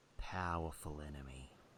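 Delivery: whispering. Voicing a character who whispers into another's ear in a tent, whispering. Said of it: "he whispers into his ear".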